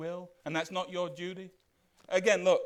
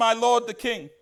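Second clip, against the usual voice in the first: mock shout, much higher; 4 semitones higher, 9 dB louder than usual. Retelling how David comes out and shouts to Saul, retelling a shout. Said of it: "David comes out and he shouts".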